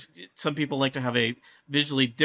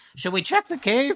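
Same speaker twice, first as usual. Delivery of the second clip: put-on goblin voice, much higher pitch; 11 semitones higher, 4 dB louder than usual. Narrating a game, voicing a goblin patrolling past a cave: goblin voice. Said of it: "One of the goblins is like".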